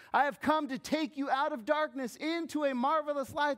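high, loud, proclaiming delivery.

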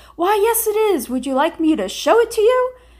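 booming, very loud, very high-pitched voice. Retelling answering the x-ray guy's question, in a very loud voice. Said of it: "in a very loud voice".

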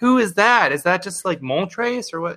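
put-on excited, high, wondering kid voice. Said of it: "People were like".

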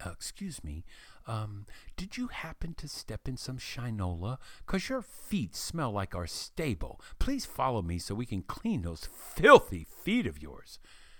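acted sweet, doting, very affectionate and loving tone. Retelling what someone said to a visitor with dirty feet, in a mock loving voice. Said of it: "said in a very loving voice".

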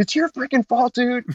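high, angry, embarrassed rant. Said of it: "And he's like".

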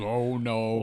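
ordinary delivery

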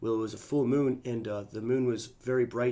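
mock grave, low, hushed, level deadpan monotone. Quoting Damien's reply to the speaker's question, imitating Damien's solemn monotone. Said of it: "he has like a solemn, monotone type of voice".

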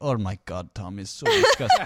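put-on Peruvian accent. Quoting a woman who is against the farting around her on a podcast, imitating a Peruvian accent. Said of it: "she has this Peruvian accent".

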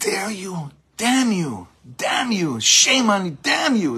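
high, swooping, drawn-out angry scream. Acting out a man screaming at someone, retelling a scream. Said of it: "Screaming at him".

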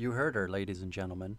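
put-on, flirty, seductive tone. Telling listeners to vote for the speaker's pick: put-on seductive tone. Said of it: "Why'd you say that like you're trying to fuck somebody?".

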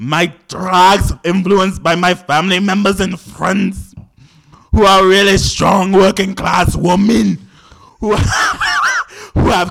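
booming, very loud, high butch queen Scottish accent. Prompted by another speaker to do scottish butch queen realness, speaker gives it a go. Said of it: "Scottish butch queen realness".

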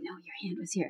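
whispered, soft, very gentle and kindly. Retelling how an actor corrected someone: imitating a very gentle correction. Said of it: "in a very, very gentle way".

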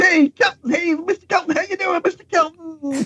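high, far-off sounding impression voice.

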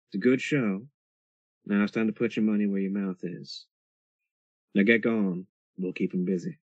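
soft whispering. Voicing a drag queen who leans in so only you hear: whispering quietly. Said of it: "say quietly to you".

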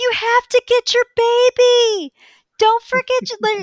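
mock shouting. Speaker retells a YouTuber contestant yelling at a guy; retelling a yell. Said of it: "like yelling it at the guy".

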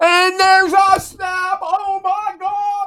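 acted overexcited announcer voice. Imitating a radio play-by-play announcer calling a snap: imitating an overexcited play-by-play announcer. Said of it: "the guy gets excited when there's a snap".

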